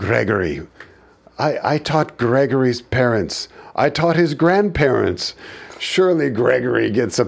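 exaggerated bad Indian accent. Retelling a man questioning a 22-year-old teacher's F grades, bad Indian accent as Mr. Shukla. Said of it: "my Indian accent is bad".

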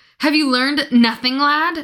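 high-pitched, loud bellowing voice. Narrating a story, the captain scolds a subordinate, bellowing. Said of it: "Bellowed Agatha".

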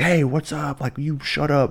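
acted intense yelling. Imitating a comedian coming at the audience: imitating an intense stage yell. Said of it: "he's very intense on the stage".

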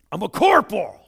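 loud, haughty, arrogant, superior yell. Retelling a story where a leader yells up at a stranger on horseback: mock-arrogant reply. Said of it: "with incredible arrogance".

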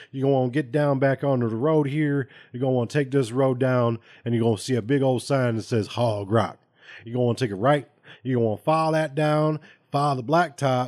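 put-on heavy Southern accent, laid on thick. Retelling how a man answered a request for directions, in the thickest Southern accent. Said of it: "in like the thickest southern accent".

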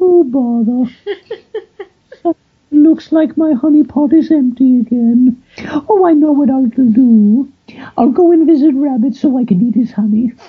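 very high cartoon bear voice, "do" drawn out. Demonstrating a cartoon voice recently started on, a Winnie the Pooh voice. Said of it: "he's got that high voice, but also... low enough for it to have a range".

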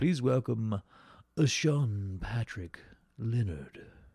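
put-on, fancy, grand posh delivery. A host introducing a guest by name, in a fancy voice. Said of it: "That's my fancy voice".

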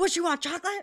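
mock yell, high-pitched and very loud.

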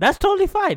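very high-pitched, defensive, protesting voice. Mocking how Vignesh would answer, imitating his high-pitched defensive voice. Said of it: "in his high-pitched defensive voice".

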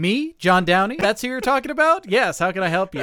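put-on high, glib, eager-to-help eight-year-old voice. Imitating how someone else would answer when called by name: imitating John as a glib helpful eight-year-old. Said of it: "you're incredibly glib and, ... helpful eight-year-old".

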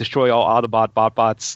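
ordinary talk

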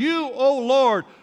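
mock fervent, impassioned crying out, prayerful tone. Acting out people crying out in prayer: acting out crying out to god. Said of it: "we begin to cry out".

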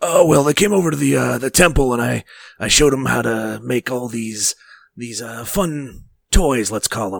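put-on scratchy game-character voice. Game master voicing the NPC Dalton, answering a question about the party: scratchy Dalton voice. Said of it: "Sound pretty scratchy".

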